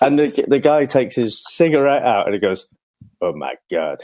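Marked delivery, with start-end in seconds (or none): 3.2-4.1 put-on low, soft, murmured comic French accent. Man retelling a French guy's reaction as he takes his cigarette out, in a Peter Sellers-style French accent. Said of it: "that sounded like uh, Peter Sellers then".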